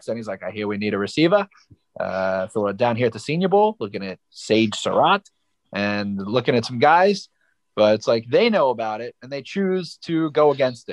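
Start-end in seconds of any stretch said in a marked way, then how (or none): 0.4-1.5 put-on low, deep Boston accent. Quote the Ravens GM from his Twitter video, in Eric DeCosta's Boston accent. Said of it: "He has a Boston accent".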